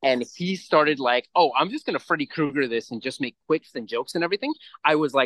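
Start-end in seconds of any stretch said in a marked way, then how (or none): none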